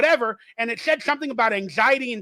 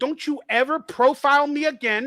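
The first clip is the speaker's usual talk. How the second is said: acted, held-back scolding, dragged out word by word; 2 semitones higher than usual. Retelling a confrontation with an officer: imitating himself yelling. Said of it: "I just yelled at this guy".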